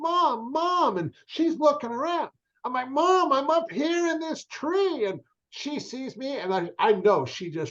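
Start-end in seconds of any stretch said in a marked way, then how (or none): 0.0-5.0 yelling, pitched higher. Retelling calling to Mom from high up a tree: retelling a yell to Mom. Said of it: "I start yelling".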